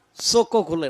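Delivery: normal talking voice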